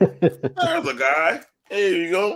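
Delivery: high, slow mock announcer voice. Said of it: "Chris Collinsworth is horrible in my book".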